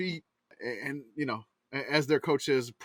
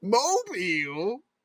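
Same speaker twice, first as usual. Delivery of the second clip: mobile, pitch rising at the end; 7 semitones higher, 3 dB louder than usual. Retelling how he said it with a question mark: rising question on Mobile. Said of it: "he said it with a question mark".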